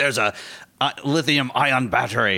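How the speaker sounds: put-on Irish accent. Riffing on a movie-style scenario during a conversation, irish accent. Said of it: "Great Irish accent".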